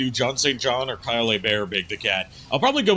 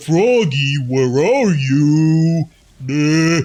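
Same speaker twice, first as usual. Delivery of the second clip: loud dopey voice with a drawn-out "you"; 3 semitones higher, 6 dB louder than usual. Describing someone's Big the Cat performance, doing a dopey 'duh' Big the Cat voice. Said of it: "that kind of duh voice".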